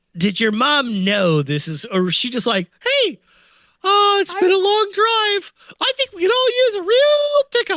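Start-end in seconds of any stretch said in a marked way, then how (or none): 2.8-7.8 very high, squeaky cartoon voice. Voicing someone's mom after a long drive, in a Mickey Mouse voice. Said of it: "why is his mom Mickey Mouse?".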